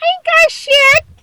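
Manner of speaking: very high-pitched scream. Retelling a player going into a nine thousand pot, imitating someone screaming.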